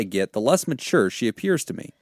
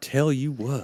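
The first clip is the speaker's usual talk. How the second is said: put-on cartoon Texan voice, quieter; 6 dB quieter than usual. Joking about answering a letter in character: Hank Hill voice. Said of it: "We should have done the Hank Hill voice".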